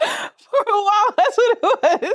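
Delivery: slow, high-pitched laughter.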